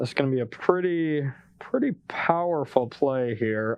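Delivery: low, mock enthusiastic, dripping with sarcasm. Player announcing a move against an opponent's card, extremely sarcastic. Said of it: "I was being extremely sarcastic".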